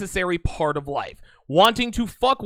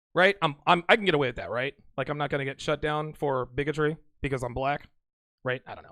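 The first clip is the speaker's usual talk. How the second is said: usual speaking voice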